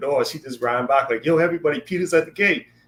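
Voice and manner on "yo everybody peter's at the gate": put-on thrilled girl voice, excited and pitched up. Retelling a girl running back to tell everyone, imitating someone excited. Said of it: "she got so excited".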